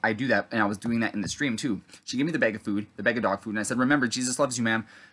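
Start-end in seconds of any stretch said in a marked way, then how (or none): none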